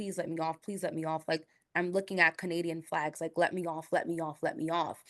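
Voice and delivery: put-on desperate, begging tone. Retelling a man begging the driver to let him off: imitating someone begging. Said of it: "he was begging".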